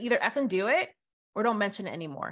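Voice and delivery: ordinary talk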